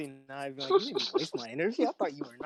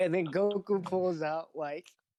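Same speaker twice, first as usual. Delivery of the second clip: normal talking voice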